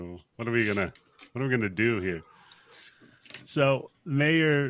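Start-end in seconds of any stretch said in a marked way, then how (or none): 0.0-2.2 mock nonchalant uncaring tone, lower. Retelling a movie scene, quoting the same character: imitating an uncaring tone. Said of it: "he just does not care".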